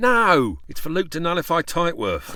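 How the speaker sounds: worked-up, stressed, emphatic delivery. A character corrects another's misunderstanding about a plan: shouting. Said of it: "There's no need to shout".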